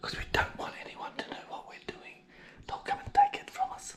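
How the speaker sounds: barely audible, very quiet, hushed secretive whisper. Joking about keeping the homemade bacon secret: whispering. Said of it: "Why are we whispering?".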